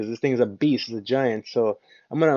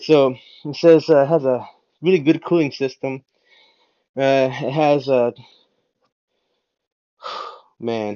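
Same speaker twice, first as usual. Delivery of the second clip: out of breath, winded, catching breath; 4 dB louder than usual. Back in front of the camera after stepping away, out of breath. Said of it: "I need to catch my breath here for a second".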